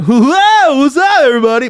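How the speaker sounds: very high, very loud, shrill goofy dumb voice. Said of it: "read it in some dumbass language like".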